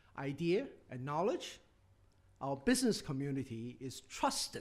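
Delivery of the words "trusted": "trusted" leaned on with heavy stress. Addressing an audience about the country's strengths, stressing the word trusted. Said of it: "and I emphasize the word trusted".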